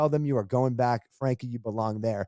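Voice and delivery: ordinary talk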